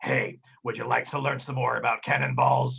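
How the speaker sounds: swaggering, boastful pirate deckhand voice. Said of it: "right next to Kaz and says".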